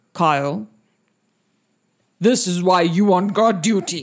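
orc priest character voice. Voicing the Orc High Priest scolding a guard: Orc High Priest voice. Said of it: "the Orc High Priest looks at him and, and he says".

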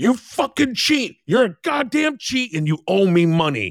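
acted-out angry shout, very high-pitched. Recounting a game character who stares at a player's character: retelling an angry yell. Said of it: "he just starts yelling".

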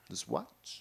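very quiet, hushed whisper, mostly breath. Showing how to do the voice: Christopher Walken impression. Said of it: "Christopher Walken, you gotta be like".

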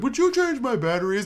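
high talking-doll voice. Retelling what a cousin's low-battery toy said: Winnie the Pooh voice. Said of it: "a full-ass Winnie the Pooh voice".

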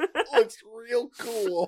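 high, slow, drawn-out drawl on "real cool". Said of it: "that's what I would say".

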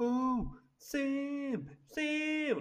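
very high shrill alarmed scream, one word stretched long. Retelling a game scene where the hero screams for his brother: imitating Nathan Drake screaming. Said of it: "Nate screams".

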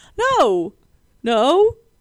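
emphatic, high, loud crying refusal tone.

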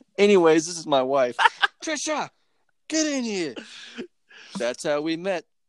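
put-on full, high, swooping New Jersey accent. Comedian acting out a man introducing his wife, New Jersey accent. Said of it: "you morphed into a New Jersey accent".

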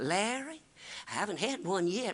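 soft, charming southern drawl. Retelling asking his aunt when she last had a wreck, imitating Aunt Daisy's southern drawl. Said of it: "a charming southern drawl".

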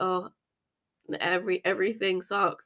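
really sad, boring, flat monotone drone. Showing how tone of voice reveals feelings: sad, boring monotone. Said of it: "really, really sad ... really, really monotone and boring like this".

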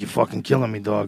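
acted rough New Jersey voice. Imagining Joey Diaz answering Obama: Joey Diaz impression. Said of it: "He'd be like".

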